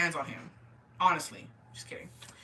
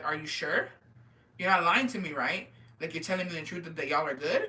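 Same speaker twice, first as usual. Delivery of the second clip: ordinary talk, nothing marked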